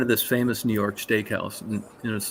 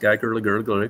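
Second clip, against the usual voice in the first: ordinary delivery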